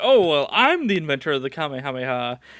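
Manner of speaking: usual speaking voice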